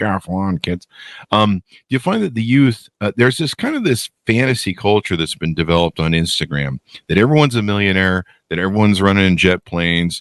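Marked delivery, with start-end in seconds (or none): 0.0-0.9 put-on old man voice, slower. Joking that he talks like an old man, old man on a lawn voice. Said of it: "I talk like a guy on a lawn going".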